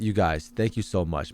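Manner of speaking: soft, dead serious tone. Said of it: "I'll be dead serious".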